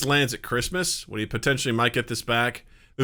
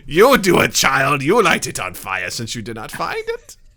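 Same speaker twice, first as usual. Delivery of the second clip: bad put-on German accent with swooping pitch; 4 dB louder than usual. Joking about the Christmas pickle game, in a bad German accent. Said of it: "I was doing a bad German accent".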